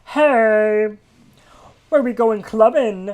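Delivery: campy frog voice, very high, loud, "hey" stretched out.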